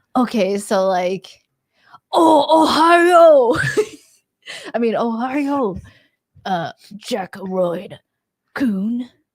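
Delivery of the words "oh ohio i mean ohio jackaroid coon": fake Japanese accent, much higher. Asked about accents, the speaker demonstrates a mock Japanese accent. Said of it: "you mean an accent?".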